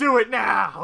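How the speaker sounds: high, loud, excited cheer.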